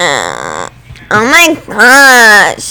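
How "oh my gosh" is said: mocking, slow, drawn-out put-on voice. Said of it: "talking like that".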